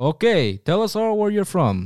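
put-on Russian accent, high-pitched and slow. Imagining joining the Foreign Legion, speaker acts out being questioned there, in a Russian accent. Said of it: "I am giving a Russian accent".

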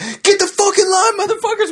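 very high, shrill screaming. Retelling men at a prison screaming at the kids getting off the bus, retelling a scream. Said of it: "dudes just screaming at us like".

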